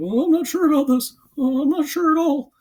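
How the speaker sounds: very high, hesitant, unsure cat voice. Voicing a cat in a picture that looks tentative: imitating a tentative cat. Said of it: "That's my impression of that cat".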